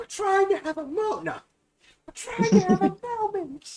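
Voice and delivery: mock sitcom-style scream. Retelling turning to the staff bringing breakfast, with a mock sitcom-style scream. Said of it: "in a very like sitcom style scream".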